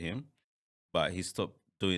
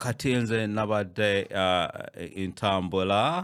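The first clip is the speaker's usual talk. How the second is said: put-on slow Northern Ugandan accent. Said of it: "they speak like".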